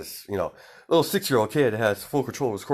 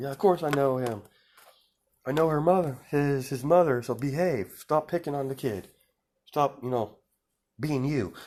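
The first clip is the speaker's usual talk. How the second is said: mock stern, mild scolding with raised pitch; 6 semitones higher than usual. Retelling a scene where Mitsuki yells at her son: imitating Mitsuki yelling. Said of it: "she's yelling at him".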